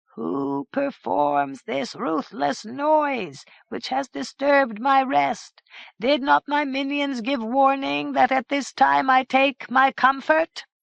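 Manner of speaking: high, slow, rasping, drawn-out voice. Narrator reads the middle head calling down over the parapets, rasping Sir Throop voice. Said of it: "called out in a rasping voice".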